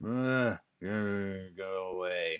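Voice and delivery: very slow, half-asleep groaning. Player describing trying to wake a sleeping man, acting out his groan. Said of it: "He kind of groans".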